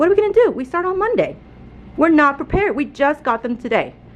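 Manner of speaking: a little worked-up, frustrated, mounting exasperation. Teacher talking to viewers about classroom supplies: frustrated. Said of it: "you can hear it in my voice that I'm getting a little bit frustrated".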